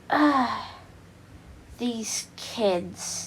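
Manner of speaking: hushed, breathy, whispered villain voice. Retelling a scene where villains walk out, the speaker does a Shigaraki voice. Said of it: "I'm gonna try to do a Shigaraki voice".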